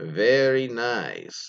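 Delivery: heavily rolled R in "very", "nice" stretched out. Reading a submitted story, imitating the boyfriend's Borat impression. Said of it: "he actually has, like, five R's in there, so that's the reason I said it like that".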